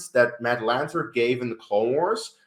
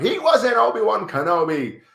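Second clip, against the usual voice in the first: very high-pitched screaming fan screech; 9 semitones higher, 4 dB louder than usual. Imitating Obi-Wan Kenobi fans objecting: imitating fans screaming. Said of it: "fans screaming at me like".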